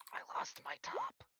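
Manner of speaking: very slow, breathy whisper. Voicing a character leaning close to a player's ear: whispering in character. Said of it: "leans down and whispers in your ear".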